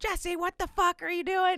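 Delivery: screaming, pitched very high. Retelling how someone waiting up at night reacted: imitating someone screaming.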